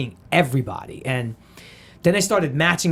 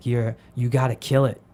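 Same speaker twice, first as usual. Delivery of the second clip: whispered, lower-pitched delivery; 4 semitones lower than usual. Retelling an actor pulling him aside before an audition: imitating Mark Wahlberg whispering.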